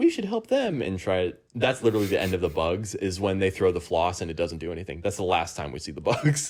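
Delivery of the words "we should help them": very high, squeaky, tiny bug voice. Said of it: "and then the bugs, like".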